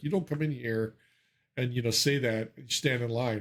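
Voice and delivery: ordinary talk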